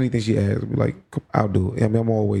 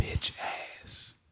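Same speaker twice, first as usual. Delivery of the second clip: pushed, emphatic, forceful strong whisper. Retelling what a five-year-old said close to the ear, in a strong whisper. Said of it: "in a strong whisper".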